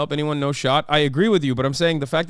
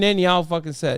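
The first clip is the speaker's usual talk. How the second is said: ordinary delivery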